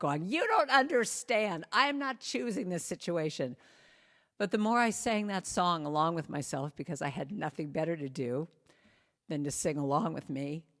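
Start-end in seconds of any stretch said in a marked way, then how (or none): 0.3-3.6 play-acted, high, angry, frustrated yell. Retelling being lost while driving, imitating herself yelling. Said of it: "yelling at myself".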